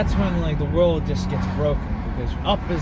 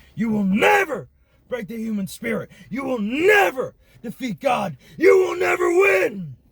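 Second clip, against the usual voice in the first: higher put-on ranting talk-show host voice; 7 semitones higher than usual. Doing an impression of Alex Jones ranting about fighting: Alex Jones impression. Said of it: "my Alex Jones impression".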